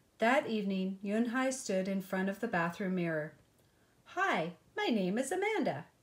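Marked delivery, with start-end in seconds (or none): 4.1-5.8 upbeat, cheerful, sing-song tone. Standing before the bathroom mirror, a girl tries out a new name, cheerfully. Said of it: "she said cheerfully".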